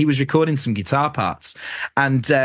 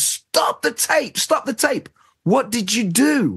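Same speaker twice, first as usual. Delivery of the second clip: mock very high shriek with words stretched; 10 semitones higher than usual. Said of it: "jumps out of his seat and screams".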